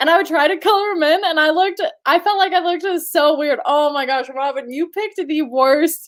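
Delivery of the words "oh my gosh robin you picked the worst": laughing hard, cracking up mid-sentence through words. Telling Robin what Robin picked for her, laughing hard. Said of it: "I'm crying".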